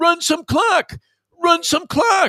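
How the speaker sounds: very high, drawn-out hollering. Retelling a friend yelling at the tv during a game: imitating someone yelling. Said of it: "he's yelling as he's looking at".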